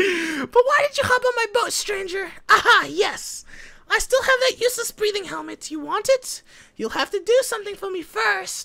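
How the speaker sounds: put-on loud, very high, babyish voice. Reading a small boat owner's lines to a stranger, in a baby voice. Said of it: "I want to read the baby voice".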